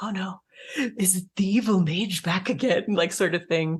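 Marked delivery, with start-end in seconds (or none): 0.0-2.9 hushed, whispered voice. Voicing a crowd of folk in the scene: whispering. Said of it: "people are whispering".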